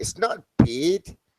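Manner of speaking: high put-on accent, sounding Australian. Trying to get the word 'bad' right, practicing a put-on accent. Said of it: "I've got to get the word bad right".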